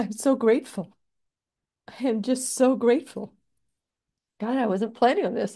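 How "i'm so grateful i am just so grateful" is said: crying tears of joy. Speaking to viewers about fourteen years of work, crying tears of joy. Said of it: "These are tears of joy".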